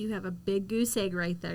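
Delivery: ordinary delivery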